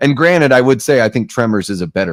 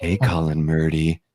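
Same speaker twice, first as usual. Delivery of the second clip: fake sultry seductive voice, lower and quieter; 5 semitones lower, 6 dB quieter than usual. Greeting colin in a joking relaxation message: put-on seductive voice. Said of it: "why do I make it try to sound seductive?".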